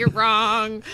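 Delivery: plain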